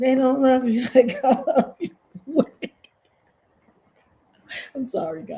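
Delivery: speaking through laughter. Mocking what other content creators say about her, laughing while talking. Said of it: "I cannot stop laughing".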